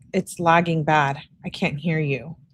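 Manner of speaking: ordinary talk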